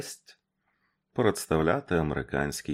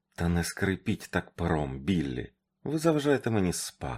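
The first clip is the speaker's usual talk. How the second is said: plain reading voice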